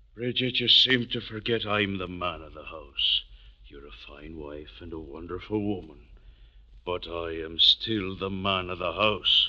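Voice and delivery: soft, quiet talking, words kept down. Asserting authority over the household to his wife: talking quietly. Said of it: "You're talking quiet now".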